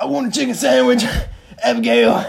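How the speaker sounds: very high, loud, belted voice swooping around. Retelling ordering at a drive-thru: John Marston voice. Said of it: "the John Marston impression".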